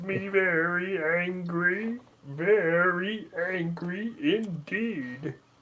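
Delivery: the word "very" pitched high and drawn out. Carrying on a bit after someone recognizes the character, in a Marvin the Martian voice. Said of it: "we got Marvin the Martian in the house".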